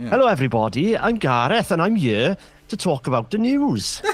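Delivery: put-on broad, lilting Welsh accent, fully on. Talking about Welshness, a speaker slips into Gareth, Welsh accent. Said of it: "that's an incredibly good Welsh accent".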